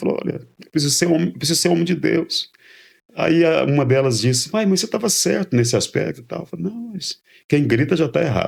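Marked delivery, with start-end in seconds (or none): 0.2-2.5 tearful, heartfelt speech through tears. Retelling to the pastor what he told his whole family, retelling tearful words. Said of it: "Chamei toda a família chorando".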